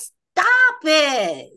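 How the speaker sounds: commanding, loud, high, swooping yell. Retelling being yelled at to stop: imitating a yell. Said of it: "my higher self yelled at me".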